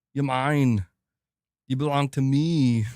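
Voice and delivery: slow, deliberate scream, each word separated. Retelling how the played clip sounded, imitating Arnold screaming. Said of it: "Arnold just screaming at a bunch of kids".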